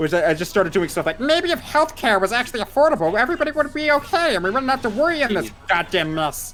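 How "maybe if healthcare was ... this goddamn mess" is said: very high-pitched put-on cartoon character voice. Showing the early character voice doing political rants: Stitch voice. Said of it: "capable of doing a very accurate Stitch... in that voice".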